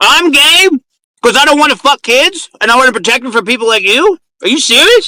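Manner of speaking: agitated, worked-up ranting. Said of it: "keep upping your blood pressure".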